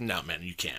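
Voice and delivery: curt, blunt, rude, dickish tone. Retelling refusing a stranger who asked to use the phone: imitating own rude refusal. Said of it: "I said it like a fucking dick".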